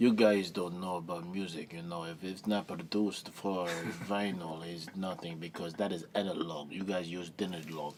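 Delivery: put-on German-accented speech. Retelling what a roommate from germany said about vinyl: imitating a german accent. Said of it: "and this is in his accent".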